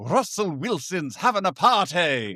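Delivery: put-on British accent. Saying a phrase the family says at home a lot, in a British accent. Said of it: "better to say it in in the in the British accent".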